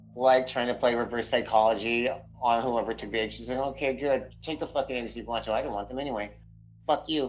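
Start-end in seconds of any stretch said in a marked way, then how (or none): 3.6-7.3 put-on mutter under breath, much quieter. Speaker voicing her on finding the eggs gone: acting out muttering under breath. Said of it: "she mutters under her breath".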